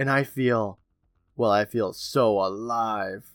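put-on sigh. Recapping a scene and acting out what he says, imitating a sigh. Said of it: "Then he sighs, saying".

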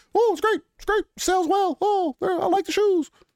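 squeaky, very high-pitched cartoon voice. Mocking what people say: Mickey Mouse-like voice. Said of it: "Why you sound like Mickey Mouse right now?".

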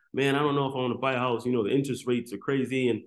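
plain

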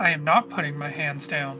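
ordinary talk, nothing marked

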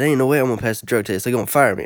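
mock fast, slurred, run-together speech. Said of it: "everything runs together. It's like an auctioneer".

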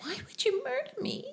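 high, hushed, eerie ghostly voice.

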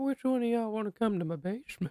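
very high-pitched put-on voice. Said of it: "I have to talk very softly to get that Herbert".

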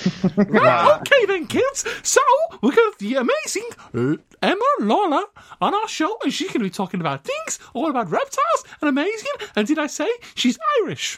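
squeaky voice with wide pitch swings. A podcast host introduces the guest to the kids, in a Mickey Mouse voice. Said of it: "tempted to introduce the guest as Mickey Mouse".

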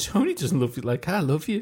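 put-on goofy, weird girly comedy voice, swooping pitch. Doing a comedy bit, speak in a weird comedy girl voice. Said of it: "Into that weird voice".

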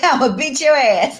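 playful teasing tone. Retelling what her date said while chatting on a date, retelling a joking remark. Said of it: "he said it joking".

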